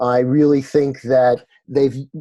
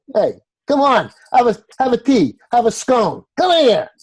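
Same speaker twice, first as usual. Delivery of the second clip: very high, swooping put-on New York accent; 11 semitones higher than usual. Offering passersby tea and scones in a put-on new york accent. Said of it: "with a New York accent".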